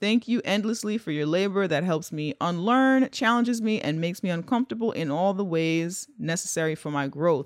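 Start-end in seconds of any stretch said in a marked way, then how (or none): none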